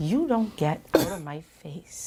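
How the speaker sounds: put-on slow restrained anger. Imitating how Belinda talks in an argument: speaking slowly, holding back curses. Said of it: "That's how she's talk".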